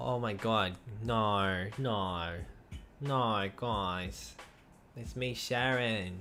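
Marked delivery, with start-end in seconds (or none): 5.0-6.2 clumsy, botched, put-on Australian accent. A streamer addresses the guys in a bad Australian accent. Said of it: "my Australian accent is poopy doo doo".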